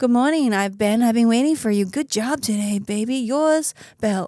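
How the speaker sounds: sultry, flirty, seductive AI voice. Imitating a partner's AI assistant greeting him. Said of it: "some chick voice coming out to me like".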